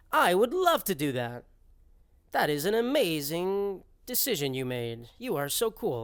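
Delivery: slow, flat robot voice. Showing how a message with one exclamation point reads: robot voice. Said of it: "I read it in, like, a robot voice".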